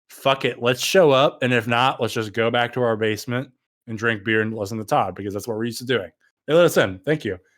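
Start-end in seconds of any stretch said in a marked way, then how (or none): none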